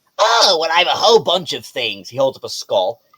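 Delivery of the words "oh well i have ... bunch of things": put-on little kobold creature voice. Voicing a little kobold merchant greeting a player: Timon the kobold merchant voice. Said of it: "He happens to be a little kobold".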